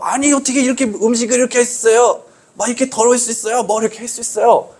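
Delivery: high, sharp, angry scolding tone.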